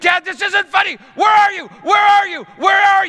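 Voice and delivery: very high, loud, repeated screaming. Retelling a son screaming in dark sewer pipes: imitating Coleman screaming. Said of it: "And then he started screaming".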